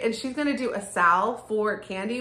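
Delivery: normal talking voice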